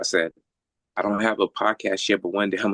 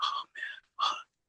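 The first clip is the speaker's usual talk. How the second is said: tearful, whispered, crying breakdown; 10 dB quieter than usual. Retelling his own words after he started crying: retelling own crying. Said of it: "I start crying and shit".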